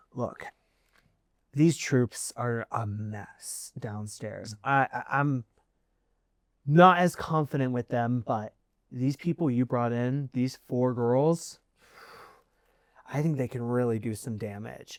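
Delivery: low, hushed half-whisper. Narrating a scene where she speaks to Kaylin behind a shut door, in a low half-whisper. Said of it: "you hear her in more of a low whisper".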